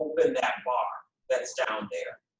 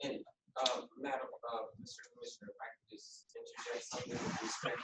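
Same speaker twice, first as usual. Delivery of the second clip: much softer, barely voiced, nearly whispered. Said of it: "Speak up so that, that we get recorded".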